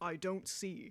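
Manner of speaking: sudden, very deep voice plunging way down. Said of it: "her voice just drops ten octaves".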